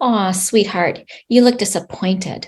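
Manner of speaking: very calm, gentle voice. Showing how to name someone's feelings back to them, calm gentle voice. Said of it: "say very calmly and in that gentle voice".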